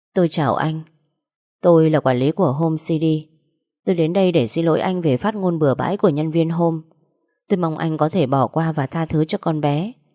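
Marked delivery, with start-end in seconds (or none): none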